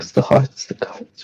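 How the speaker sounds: spoken in a whisper. Playing a character who whispers about the hearts and cards: whispering. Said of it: "You hear him whisper this".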